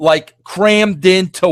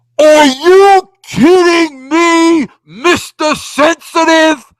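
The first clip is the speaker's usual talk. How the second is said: high, slow, loud demonic voice. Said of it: "cutting this promo on me in this, in this third party demonic voice".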